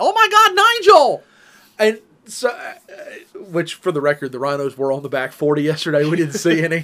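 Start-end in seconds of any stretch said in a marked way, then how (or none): 0.0-1.2 shrieking cry, very high, very loud, drawn-out. Retelling a video with a charging rhino: imitating a lady yelling. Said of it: "answer to that".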